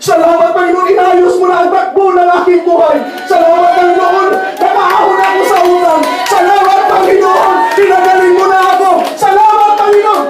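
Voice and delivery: loud, high-pitched, triumphant shout. Showing how to praise god when tired: shout of victory. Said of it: "Shout na victory!".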